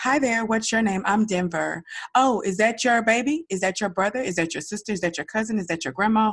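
bubbly, outgoing, whirlwind-fast friendly chatter. Imitating a four-year-old daughter who greets strangers everywhere: imitating Denver. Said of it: "Everywhere we go, and I mean everywhere we go, it is".

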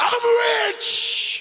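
put-on yelling, pitched very high. Retelling a grandmother in a family prayer circle: imitating grandmother yelling. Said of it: "my grandmother would just start yelling".

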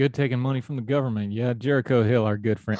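playful, joking teasing tone. Chatting with the other speaker, teasing. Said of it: "I'm teasing you".

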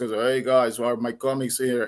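low, deep, rumbling big male voice. Retelling what a guy at the comic shop would say on arrival, low voice. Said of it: "say with his low voice".

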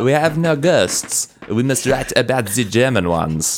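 fake French accent. Voicing the french in a story about a ghost anthology, bad french accent. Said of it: "Bad French accent".

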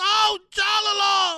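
announcer scream, very loud and high-pitched. Mocking how an announcer called the fight: imitating Ray Flores screaming. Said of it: "screaming at the top of his lungs".

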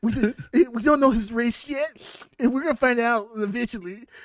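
very high, slow mock nerd voice. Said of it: "I was like".

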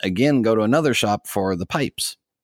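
ordinary delivery

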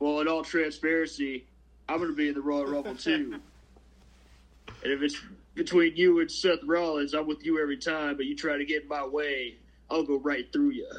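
in-character wrestler backstage promo style delivery. Retelling a wrestling interview segment: Samoa Joe impression. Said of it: "that's a pretty good Joe impression".

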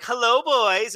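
mock playful, teasing, coy delivery. Retelling a teacher's greeting to boys in a trailer: imitating a teasing greeting. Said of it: "she's blatantly teasing the greasers".

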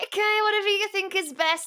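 play-acted, very high, forced and grudging, through gritted teeth. Speaker acts out how they'd have agreed about delaying the album, through gritted teeth. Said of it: "like through really gritted teeth".

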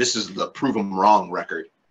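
plain

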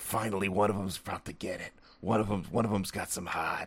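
put-on quiet, low whisper in a New York accent. Retelling a background movie character's reaction to a fight challenge, low whisper, new york accent. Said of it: "talks in a low whisper and kind of a New York accent".

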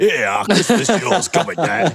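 put-on Yorkshire accent. Repeating another speaker's line back: imitating a yorkshire accent. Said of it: "you sounded so Yorkshire".

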